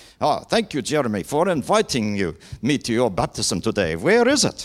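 put-on German accent. Imagining a guest at our baptism service talking to Jeremy, as Felix Manz in a fake German accent. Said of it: "we'll give him a fake German accent".

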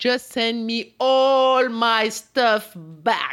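high, loud, slow, demanding voice.

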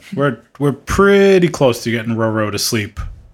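plain

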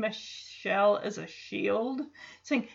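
ordinary delivery

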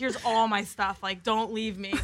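ordinary talk

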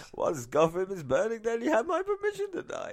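very high put-on villain voice with swooping pitch. Asked what it would sound like, giving it a try: Bane impression. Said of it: "I could do my Bane impersonation".

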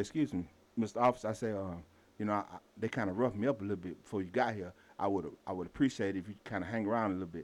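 very soft half-whisper under the breath. Retelling asking an officer to stay nearby, retelling a half-whisper. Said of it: "So I'm whispering".

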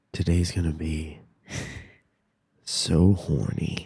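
soft, sultry, seductive come-hither voice. Playing a game where a given sentence must sound sexy, in a sexy voice. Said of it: "and I'll make it sound sexy".

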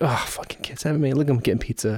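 muttered under breath. Retelling a remark made to the bride, retelling a mutter under breath. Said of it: "under my breath to the bride".

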